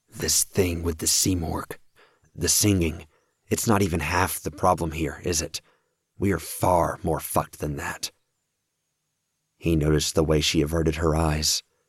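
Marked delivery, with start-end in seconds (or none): 0.2-8.1 spoken in a hiss. Leaning close to her, Kraus says this hissed. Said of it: "He hissed".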